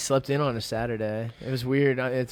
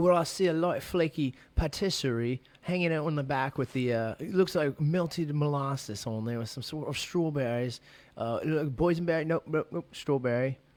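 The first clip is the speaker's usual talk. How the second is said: soft, put-on British accent; 2 semitones higher, 5 dB quieter than usual. Asked to describe a pizza as a British person, put-on British accent. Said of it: "Describe this pizza right here as a British person".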